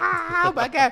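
whiny, very high, slow, drawn-out shriek. Describing the movie version when he first sees the demon; mock scream like a little bitch. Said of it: "he screams like a little bitch".

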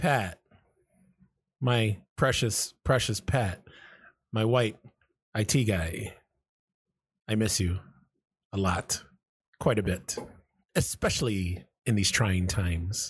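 earnest, heartfelt, very sincere, slow delivery. Telling Pat on the recording that he is missed, very sincere. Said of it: "That sounded very sincere".

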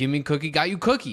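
acted-out exasperated, tongue-tied, high, loud blurt. Explaining an inside joke, the speaker quotes a scene from New Girl: imitating frustrated New Girl character. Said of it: "he's like really frustrated".

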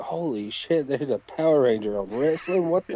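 ordinary talk

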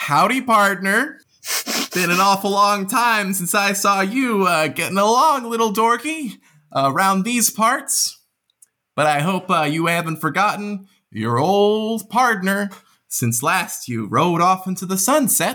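speaking through a big smile. The game master voices the clerk greeting the player's character Drix; Ramira J.N. smiling widely. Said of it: "She smiles widely and she says".

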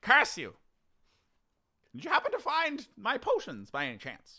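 put-on very high, swooping, pompous, cranky old scientist voice. A scientist locked in against their will asks the adventurers about potions: trapped scientist character voice. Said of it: "My name is [name]. Don't you know? The famous scientist. I've been locked in here against my will".

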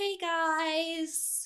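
tiny, very high little voice, stretched out. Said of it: "she has the tiniest little voice".

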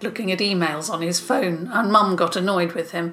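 ordinary delivery, nothing marked

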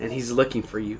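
ordinary talk

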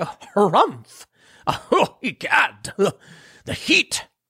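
high, slow, mock-shocked condescending harumph.

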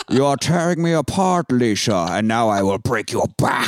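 put-on masked movie villain voice. Hosts compare movie voices; speaker performs a film line in a Bane voice. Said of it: "every impression I have is just Bane".

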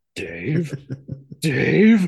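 high, swooping machine-like computer voice. Describing a deleted movie scene where a character calls out a name, imitating the computer from 2001. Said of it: "he sounds like the computer from 2001".

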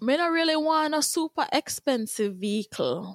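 put-on Jamaican accent. Asked about a dream car, answering in a Jamaican accent. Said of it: "Yep, that's a Jamaican".

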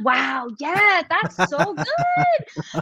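high, swooping, rising cheer, stretching out "good". Retelling watching the show back and rooting for a player: imitating own cheering someone on. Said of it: "and I'm rooting him on".

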